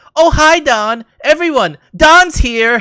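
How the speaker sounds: very high, slow, drawn-out, utterly insincere delivery. Retelling how JR greets Don Callis as he comes to sit down, imitating JR's most insincere voice. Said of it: "in the most insincere voice ever".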